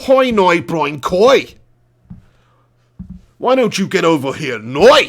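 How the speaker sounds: put-on Northern Irish accent, "now" said as "noi". Trying out accents, the speaker switches to a Northern Irish accent. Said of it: "Northern Irish?".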